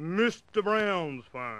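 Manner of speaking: put-on, proper, official telephone voice. Retelling answering a ringing phone: imitating own official voice. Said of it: "I put on my best official voice".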